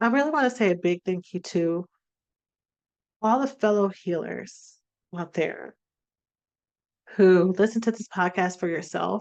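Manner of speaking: choked-up, teary voice, near crying. Podcast host thanks listeners while still tearing up, tearful. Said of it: "I'm still tearing up".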